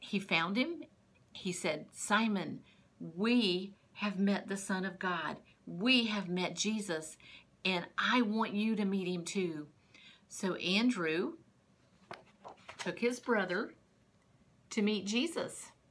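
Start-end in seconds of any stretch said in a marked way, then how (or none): none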